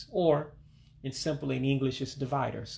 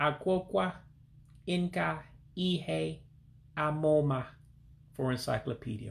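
Igbo phrase said out syllable by syllable; 2 semitones higher than usual. A speaker pronouncing a word again for listeners, said slower. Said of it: "I'll say it slower".

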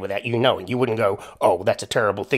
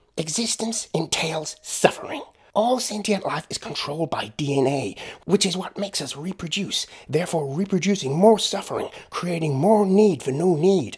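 bad attempt at American accent, pitched up; 8 semitones higher than usual. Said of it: "my crappy attempt at American accents".

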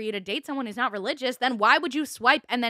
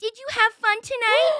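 put-on very high, squeaky, babyish voice; 11 semitones higher, 4 dB louder than usual. Retelling a date's words after being asked to do the voice: imitating a baby voice. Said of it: "as if they were separate people in a baby voice".

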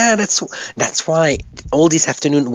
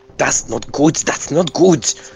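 very weird, odd put-on German accent. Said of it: "I have a very weird German accent".

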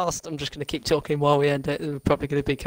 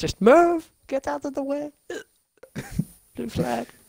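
high, shrill shout, pitched right up; 11 semitones higher than usual. Retelling a shout at another driver in the race, shouting in a Sebastian Vettel voice. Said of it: "I did shout move. And in my best Sebastian Vettel voice".

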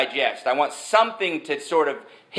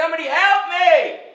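mock very high screaming; 12 semitones higher than usual. Telling a story about a man stuck in a hole: imitating someone screaming. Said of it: "he's screaming, and he's screaming".

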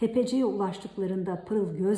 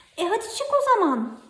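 startled, surprised outburst, very high pitch; 13 semitones higher, 6 dB louder than usual. A narrator reads a character's reply to another stuck inside a bottle, surprised. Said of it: "dedi şaşıran Pırıl".

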